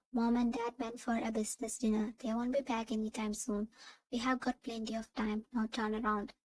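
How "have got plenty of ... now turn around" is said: plain reading voice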